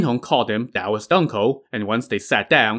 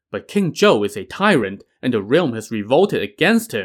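plain

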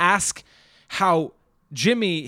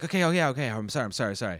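put-on insincere tone, lower and quieter; 6 semitones lower, 6 dB quieter than usual. Retelling a film scene: imitating Tommy's fake apology. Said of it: "there's that fake apology".

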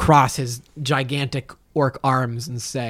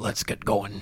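bad, soft put-on orc voice; 4 semitones lower, 9 dB quieter than usual. Chosh, sent ahead with Lola, speaks in a bad orc voice. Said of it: "Chosh will put on his best orc voice".

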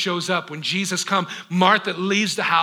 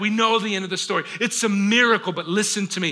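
plain

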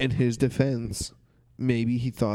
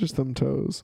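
plain

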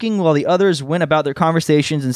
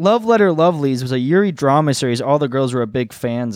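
ordinary delivery, nothing marked

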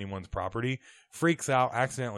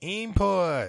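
high-pitched put-on robot voice; 8 semitones higher, 4 dB louder than usual. Asked to do an impression, says one word in Johnny Five robot voice. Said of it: "Can you do an impression of Johnny Five?".

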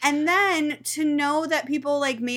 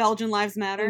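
ordinary talk

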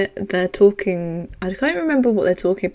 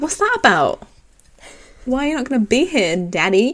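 mock sassy, suspicious, pitched-up prying tone; 5 semitones higher than usual. Retelling a scene where the daughter questions her dad: sassy Aria impression. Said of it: "And she's very sassy".

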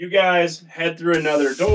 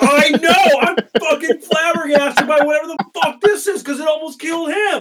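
very high, shrill, flabbergasted, exasperated screaming rant; 12 semitones higher, 5 dB louder than usual. Game master voicing Zega Bass, who just saved the party: Zega Bass screaming. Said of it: "Zega Bass just unbelievably like blown away by how awful you all are as friends, jumps in and saves you guys and pulls him up, and she just screams at you guys like".

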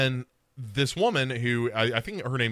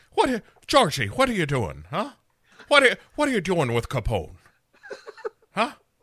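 loud, swooping bad Irish brogue; 7 semitones higher, 5 dB louder than usual. Voicing the main character while retelling the story: bad irish beat cop accent. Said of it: "a slight bit of the Irish beat cop".

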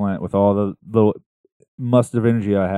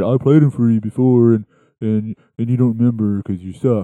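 goofy, dopey, dim-witted voice; 3 semitones higher, 4 dB louder than usual. Retelling what Clint texted back about the album: dopey voice imitating Clint. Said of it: "I get the dopey voice there".

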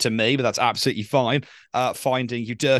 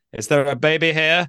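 awful put-on French accent, pitched up; 5 semitones higher, 4 dB louder than usual. Reading out a listener's message about coming home to his baby, terrible French accent. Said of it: "In a terrible French accent".

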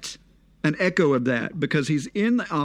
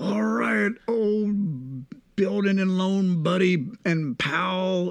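put-on slow, boozy voice, dragging and drawn out; 3 semitones higher than usual. Retelling a film scene where a character says goodbye: imitating drunk Uncle Billy. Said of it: "drunk out of his gourd".

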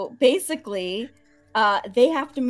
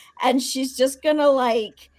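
ordinary talk, nothing marked

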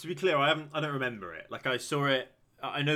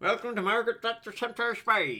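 put-on Scottish film-star voice, higher; 8 semitones higher than usual. Trying the show intro again, asking if it sounds right: Sean Connery voice. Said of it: "that's what he sounds like".

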